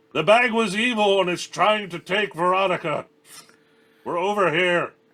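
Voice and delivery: full-throated, shrill top-of-lungs yell, very high. Shouting in character to the party from the darkness: yelling at the top of lungs. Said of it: "I just start yelling at the top of my lungs".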